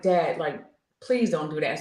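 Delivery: acted-out tearful pleading. Speaker recounts pleading with their father, retelling a tearful plea. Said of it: "I start crying".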